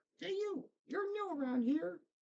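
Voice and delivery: tiny, squeaky, very high creature voice. Storyteller voicing an unseen speaker who greets the listeners, little voice. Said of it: "you hear this little voice".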